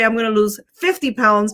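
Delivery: ordinary delivery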